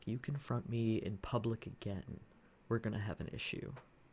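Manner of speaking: hushed, whispered under the breath. Voicing the guy who took the money, warning another man: whispered threat. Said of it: "he definitely, like, whispers this next part".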